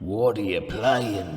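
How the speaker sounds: slow, loud, drawn-out announcer voice.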